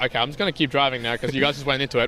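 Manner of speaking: ordinary delivery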